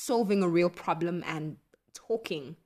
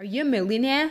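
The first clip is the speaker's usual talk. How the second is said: put-on, loud, pitched-up Australian accent; 6 semitones higher, 6 dB louder than usual. Quoting a journalist's question, in a put-on Australian accent. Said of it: "That's my best Australian accent".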